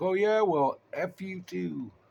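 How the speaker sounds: play-acted yell, high and drawn out. Retelling a movie scene where MacReady yells at a creature: imitating MacReady yelling. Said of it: "he yells at him".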